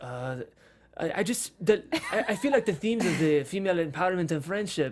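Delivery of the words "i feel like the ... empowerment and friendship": attempted Russian accent slipping into French, unfamiliar put-on voice. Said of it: "can you do a Russian accent".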